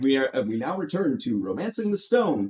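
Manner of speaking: ordinary talk, nothing marked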